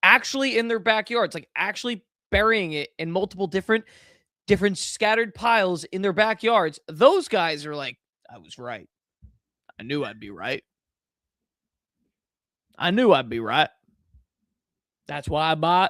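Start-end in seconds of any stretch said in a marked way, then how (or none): 8.3-15.9 very bad put-on Southern US twang. Speaker voicing guys who say they were right: worst Southern accent. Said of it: "that is the worst Southern accent ever".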